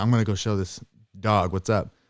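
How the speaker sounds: put-on child voice with cool, tough bravado. Retelling a kid going to confront a dog: imitating a kid acting tough. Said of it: "trying to be cool and tough".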